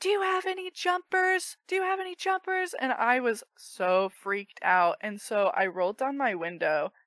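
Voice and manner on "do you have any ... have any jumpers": piercing, shrill, very high-pitched screaming. Retelling how a woman banged on the speaker's window, imitating her screaming. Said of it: "And it's just screaming".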